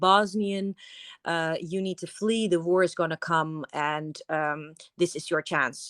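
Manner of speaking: ordinary delivery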